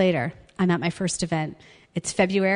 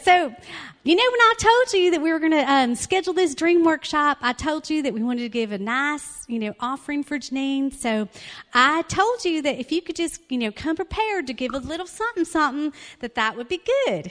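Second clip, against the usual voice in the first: put-on Southern US accent throughout, pitched up; 8 semitones higher than usual. Retelling what a woman said about an offering for janine: southern accent. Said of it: "She speaks in a southern accent".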